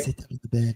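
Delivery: soft, gentle, mild-mannered put-on voice. Imitating how a gentle-looking man talks when he invites someone to sit down, in a soft, gentle, mild-mannered manner. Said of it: "he talks like he talks like this".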